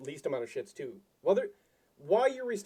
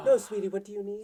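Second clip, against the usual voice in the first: mock, sugary-sweet customer-service voice; 2 semitones higher than usual. Retelling how she answered a customer, in a mock-sweet customer voice. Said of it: "the sweet customer voice".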